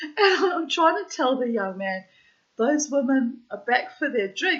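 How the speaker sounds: muffled speech, mouth full of ice. Retelling trying to tell the young man something: imitating talking with mouthful of ice.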